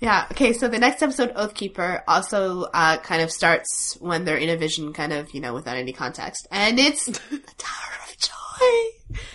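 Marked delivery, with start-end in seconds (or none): 6.5-9.2 gleeful, playful, breathy, half-whispered delighted voice. Naming the opening scene of the next episode: playfully joyful voice. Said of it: "Can you hear the joy in my voice?".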